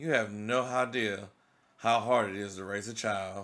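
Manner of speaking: plain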